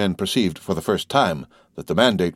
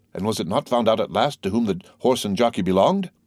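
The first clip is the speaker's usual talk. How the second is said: usual speaking voice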